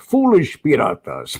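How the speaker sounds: put-on old pirate voice with Spanish accent. Showing the voice used for a theme park pirate game: old spanish pirate voice. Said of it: "I sound like an old Spanish pirate".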